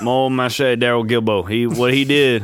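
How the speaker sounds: put-on Cajun French accent. Recalling a favorite acting moment from a movie, in a Cajun French accent. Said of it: "That's my best Cajun impression".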